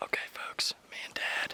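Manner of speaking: whispered, very quiet. Filming an update for the folks watching while out with Dad, whispering. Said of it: "I don't know why I'm whispering actually".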